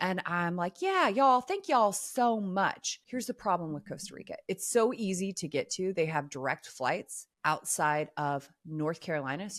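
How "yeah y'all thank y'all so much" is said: put-on kind, sweet Southern American accent, pitched up. Recalling saying thanks to people, speaking in a Southern accent. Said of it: "I'll have like a southern accent".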